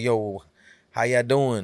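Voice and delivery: put-on Texas Southern accent. Retelling how he talked after four years away: imitating own past texas southern accent. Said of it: "kinda with the whole Texas South shit".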